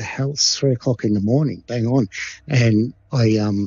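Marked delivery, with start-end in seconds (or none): none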